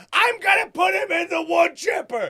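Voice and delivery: shrill, very high, furious yelling. Retelling a movie scene where a dad yells at his daughter: imitating Adam Sandler yelling. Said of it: "yelling at his daughter".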